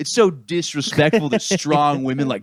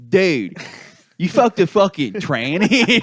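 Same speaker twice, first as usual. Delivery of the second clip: put-on heavy Philadelphia accent laid on thick, slow; 5 semitones higher than usual. Retelling what a girl from Cleveland said on a date, in a thick Philly accent. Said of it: "she had a thick fucking Philly accent".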